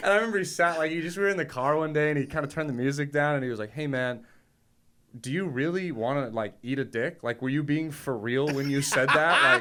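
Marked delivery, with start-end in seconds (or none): 3.7-9.4 put-on, sincere, disappointed father voice. Retelling a father asking in the car if a joke was meant: imitating dad's disappointed voice. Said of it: "such genuine disappointment in his voice".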